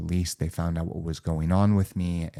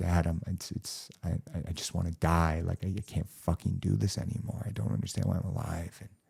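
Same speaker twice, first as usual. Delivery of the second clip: acted-out tearful, crying voice; 6 dB quieter than usual. Retelling talking to their father in a vision, retelling a tearful plea. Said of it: "I was like crying to him".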